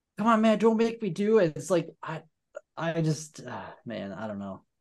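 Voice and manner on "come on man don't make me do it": put-on yelling, higher pitch. Retelling a movie scene, a cop yelling at a man: imitating a cop yelling. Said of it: "the cop is still yelling".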